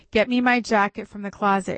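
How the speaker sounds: ordinary delivery, nothing marked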